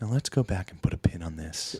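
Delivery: fake radio announcer voice. Mocking a debater, the speaker imitates him in an NPR voice. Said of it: "he has that N P R voice".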